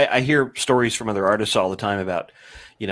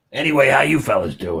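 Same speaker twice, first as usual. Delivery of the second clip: put-on old-time New York cab driver voice. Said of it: "he's a New York taxi cab driver from the sixties".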